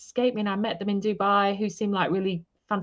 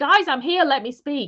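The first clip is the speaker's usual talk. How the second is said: furious scream, high and loud; 6 semitones higher, 6 dB louder than usual. Speaker retells yelling at people who could not hear her: retelling an angry scream. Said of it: "screaming in the middle in like an angry chalk voice".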